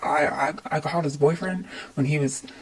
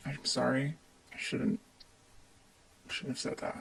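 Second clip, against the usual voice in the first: holding it together, much quieter; 2 semitones lower, 11 dB quieter than usual. In an argument about this house, apologising; struggling to keep it together. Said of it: "I'm trying really hard to keep it together".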